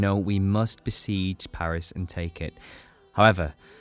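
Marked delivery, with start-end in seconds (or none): none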